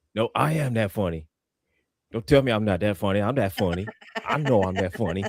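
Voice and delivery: put-on boastful voice. Retelling what Chaos would say, imitating Chaos. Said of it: "Chaos had to, had to say".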